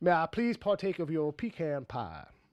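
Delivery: put-on slow, drawling Cajun accent. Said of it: "I'm trying to do my Cajun mixed with".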